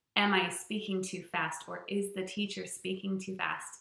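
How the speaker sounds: ordinary delivery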